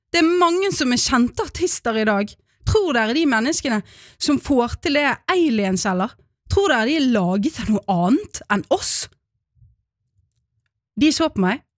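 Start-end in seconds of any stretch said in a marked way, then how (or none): 0.1-8.9 put-on raging, furious, childish outburst. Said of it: "med den type raseri bare barn kan ha".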